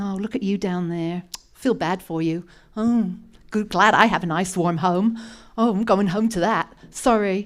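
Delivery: hollow, insincere sympathy with no heart behind it. Acting out someone who only feels pity and walks away: mock hollow sympathy. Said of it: "The Samaritan did not simply feel compassion".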